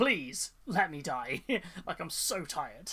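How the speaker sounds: mock pleading, slow, drawn-out begging delivery. Retelling a comic scene, imitating Dante begging to die. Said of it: "it's just him just going".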